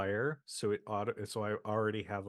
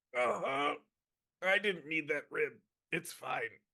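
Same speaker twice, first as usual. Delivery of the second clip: high, breathless, winded voice, out of breath; 8 semitones higher than usual. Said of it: "I got the wind knocked out of me".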